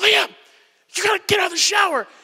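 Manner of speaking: put-on forceful stage whisper. Retelling urging his son liam out of the shower, whisper-yelling. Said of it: "I'm whisper yelling".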